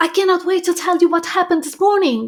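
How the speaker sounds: enthusiastic, fast, loud, high excited voice. Demonstrating tonality number four, fast and loud, with an example: excited voice. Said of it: "This is your excited voice".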